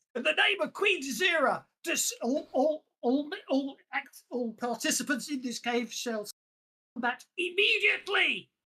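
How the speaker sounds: loud, high, blind shouting. Voicing a soldier in a cave who calls for combat: shouting blindly. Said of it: "Shouts, um, blindly".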